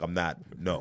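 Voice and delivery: ordinary talk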